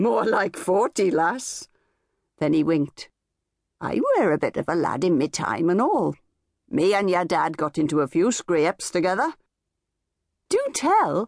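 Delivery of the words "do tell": very high, coaxing, playful teasing. A woman answers her dad's old friend after he winks; teasing. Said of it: "she teased".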